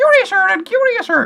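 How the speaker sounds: bad, very high, squeaky female voice. Quoting Alice while urging listeners to try an exercise, in a failed Alice voice. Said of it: "I can't do a female voice".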